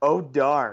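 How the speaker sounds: bone-dry, straight-faced, completely dry tone. Recalling a guy in charge of mics reacting each time, deadpan voice. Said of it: "in just like the most deadpan voice".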